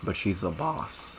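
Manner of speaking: soft voice cracking and breaking mid-line. Talking about what they want from her, voice cracking mid-sentence. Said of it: "voice crack".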